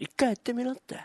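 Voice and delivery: soft, oddly creepy put-on way of talking. Comedy duo bantering back and forth, put-on creepy delivery. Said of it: "なんでその言い方気持ち悪いな".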